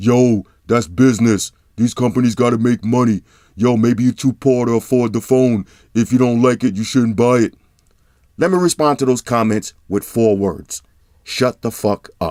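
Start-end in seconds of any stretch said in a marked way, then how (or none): 0.0-7.5 dismissive, brushing-off internet hater voice. Reading out comments from haters in a mocking hater voice. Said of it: "I gotta pull out the hater voice".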